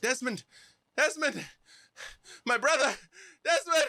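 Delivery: high far-carrying call. Game master voicing a brother calling out through the woods, echoing call. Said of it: "you hear echoing through the woods".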